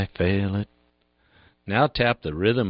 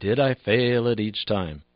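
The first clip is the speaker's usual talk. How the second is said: ordinary talk, nothing marked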